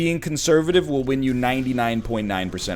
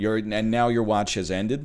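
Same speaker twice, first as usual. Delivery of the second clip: normal talking voice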